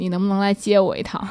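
put-on tired, weary tone. Retelling how he asked to be picked up, imitating a weary voice. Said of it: "很疲惫的语气跟我说".

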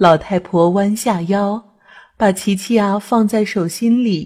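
ordinary delivery, nothing marked

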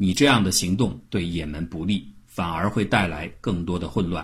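plain

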